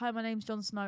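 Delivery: ordinary talk, nothing marked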